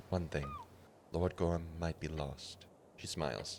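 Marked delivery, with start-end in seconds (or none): 0.1-2.7 barely audible, very quiet, hushed whisper. Reading a game character's reply, leaning forward to tell a secret: whispering. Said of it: "she whispers to you".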